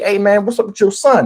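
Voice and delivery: plain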